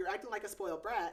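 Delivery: ordinary talk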